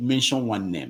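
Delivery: plain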